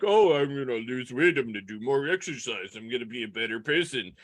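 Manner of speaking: derisive mocking send-up of eager voices. Imitating what everybody says about resolutions, in a mocking tone. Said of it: "I like how the mocking tone is there".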